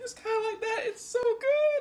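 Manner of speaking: very high, tearful, gushing voice. Tasting a dish she loves, she is teary, crying a little. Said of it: "I'm crying a little bit".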